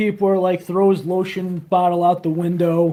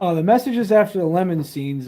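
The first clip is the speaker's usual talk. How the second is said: ordinary talk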